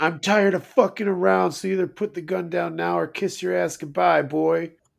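creaky, rasping, rough, high-pitched tough voice. Retelling a movie scene, quoting Daddy threatening a boy: impression of Daddy. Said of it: "You do that impression really well".

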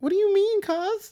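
tiny, squeaky, mousy voice, way up high. Retelling a phone call with cousin Mandy, quoting her reply: imitating Mandy's mousy voice. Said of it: "She sounded like a mouse".

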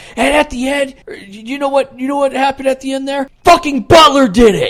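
put-on, shrill, high, loud, indignant, fed-up outburst. Imitating a friend who was furious at a game's ending: imitating someone pissed off. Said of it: "You were so pissed off".

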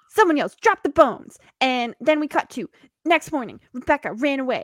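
put-on old-timey, vintage gumshoe detective narrator tone. Speeding through the end of an episode, narrating in old timey detective tone. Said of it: "like the old timey detective tone".

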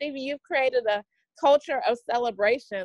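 plain

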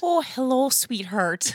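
put-on motherly voice. Answering a request to do a mom voice, maternal mom voice. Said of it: "Can you do like a mom voice?".

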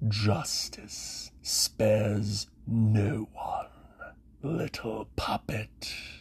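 grating, breathy, echoing whisper. Narrator voices the Dread King's shade breaking a silent room: grating Dread King voice. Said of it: "a grating voice echoed across the entire room".

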